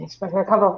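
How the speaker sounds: hushed muttering under the breath. Playing a character admitting to expecting fewer guests: muttered under the breath. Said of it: "I say under my breath".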